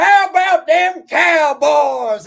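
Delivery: loud, slow, drawn-out Texas drawl. Walking into their house when the Eagles play them, Jerry Jones Texas accent. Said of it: "I'll come in there with a Texas accent".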